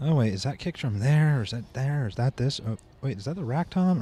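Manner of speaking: ordinary talk, nothing marked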